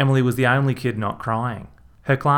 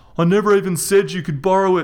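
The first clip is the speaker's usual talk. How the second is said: high, loud, muffled, squeezed yell; 8 semitones higher, 5 dB louder than usual. Rog, with his head clamped by Reg's thighs, yelled. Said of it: "Rog yelled".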